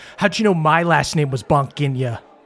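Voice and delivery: menacing, threatening tone. Voicing a character holding a dagger to someone's throat: menacing threat. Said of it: "holds it to your throat and goes".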